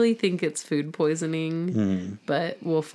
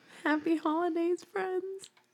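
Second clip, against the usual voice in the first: whimpering, whimpery, very high-pitched voice; 13 semitones higher, 6 dB quieter than usual. Asked by the co-host to wish friends happy holidays, in a whimpery voice. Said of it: "in your whimpery voice, say that".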